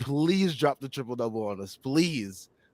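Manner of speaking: ordinary delivery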